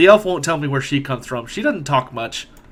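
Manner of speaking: ordinary talk, nothing marked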